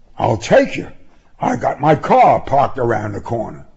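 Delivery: ordinary delivery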